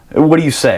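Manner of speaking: normal talking voice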